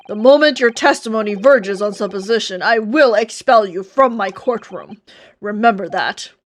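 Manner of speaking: dead-serious courtroom judge voice. Performing a courtroom bit in a serious voice. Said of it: "you just like do a serious ass voice".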